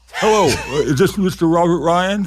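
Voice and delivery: wild, high, crazy, disguised put-on voice. Retelling the dad's prank phone call, crazy put-on voice. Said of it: "did some crazy voice".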